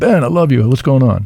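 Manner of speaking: put-on heavy New York accent. Quoting a man answering his phone call: thick New York accent. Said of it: "but with a thick New York accent".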